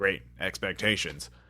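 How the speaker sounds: ordinary talk, nothing marked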